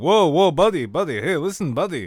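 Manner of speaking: put-on Greek accent. Acting out a stranger's reply to a rude remark: Athens accent. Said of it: "he comes back with this Athens accent".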